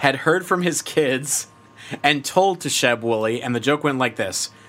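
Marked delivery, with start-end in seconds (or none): 0.0-3.4 much slower, careful, deliberate delivery. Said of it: "Slow down".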